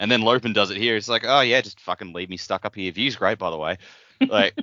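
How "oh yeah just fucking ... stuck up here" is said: put-on Australian manner and attitude. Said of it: "That's an Aussie thing".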